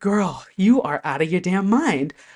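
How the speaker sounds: ordinary talk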